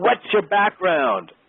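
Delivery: mock very high-pitched shouted call. Retelling how the director shouted a question through the glass: imitating someone shouting. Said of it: "he shouts to the glass".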